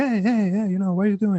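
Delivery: soft passive-aggressive tone. Imitating how an actor sounds in English: soft passive-aggressive Bruce Willis voice. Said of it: "Bruce Willis tends to be like".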